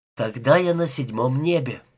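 plain reading voice

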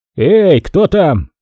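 shouted out loud. A lieutenant bends and calls into the sand toward voices below, shouted. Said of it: "крикнул прямо в песок".

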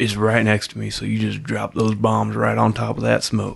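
ominous whisper. Retelling a scene, the speaker quotes a trapped man's radio call in a dark whisper. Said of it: "in a dark whisper".

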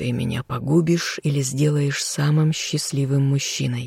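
ordinary talk

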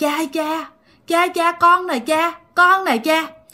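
possessed, eerie voice.

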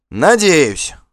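spirited cheeky tone. Answering a rival's pointedly friendly farewell, perky and cheeky. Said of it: "задорно ответил Вигмар".

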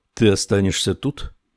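usual speaking voice

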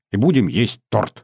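ordinary delivery

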